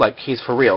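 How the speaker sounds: ordinary delivery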